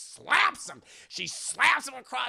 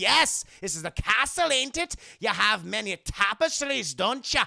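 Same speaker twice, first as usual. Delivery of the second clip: put-on bad mixed Scottish lord accent. Retelling a movie scene where Indy fakes a Scottish lord: imitating a bad mixed Scottish accent. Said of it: "pretending to be this Scottish lord".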